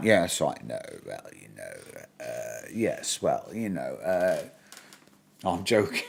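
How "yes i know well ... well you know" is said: very low, deep, slowed-down, creaky voice. Joking about charming Americans: Hugh Grant impression. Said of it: "you do the Hugh Grant".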